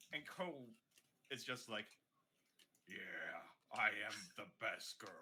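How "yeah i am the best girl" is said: captain-like voice, pitched deeper. Voicing Cole answering praise: deeper voice like the captain. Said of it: "Why does it sound like the captain, but with a deeper voice?".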